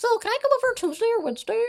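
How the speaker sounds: very high-pitched motherly voice. Retelling a phone call, doing an impression of mom. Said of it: "back to my mom impression".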